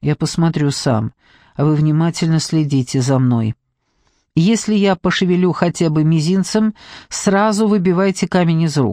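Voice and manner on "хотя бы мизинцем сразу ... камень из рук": ordinary delivery, nothing marked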